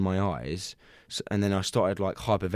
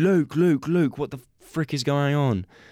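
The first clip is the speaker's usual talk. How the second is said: acted-out scream, higher-pitched and slower; 7 semitones higher, 4 dB louder than usual. Recounting a weird experience, the speaker acts out yelling to Luke: retelling a scream. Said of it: "And then I start screaming".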